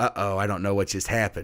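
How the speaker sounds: plain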